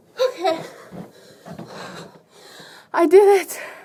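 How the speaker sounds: breathless, barely any air left, loud and high. Finishing a stair climb, out of breath. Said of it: "I'm really out of breath".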